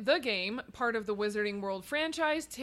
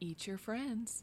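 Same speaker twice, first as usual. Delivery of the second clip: creepy spooky voice, quieter; 7 dB quieter than usual. Asked for an example of the outro line: spooky voice. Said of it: "we have to say it in a spooky voice".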